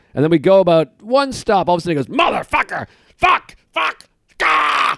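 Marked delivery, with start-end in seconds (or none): 2.2-5.0 raw, high, rough, drawn-out screaming outburst. Retelling a stranger on a train suddenly cursing: imitating a man screaming. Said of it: "And he starts screaming".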